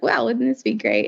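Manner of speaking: ordinary delivery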